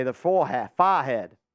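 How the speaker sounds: put-on New York accent. Quoting how dad says a word, put-on New York accent. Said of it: "As my dad would say".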